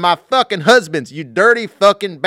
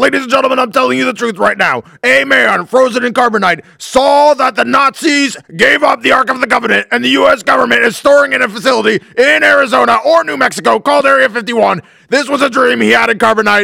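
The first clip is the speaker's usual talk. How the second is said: put-on ranting broadcaster voice, higher pitch; 3 semitones higher than usual. Imitating a radio host ranting about a frozen man's dream: Alex Jones impression. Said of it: "that hurts my voice".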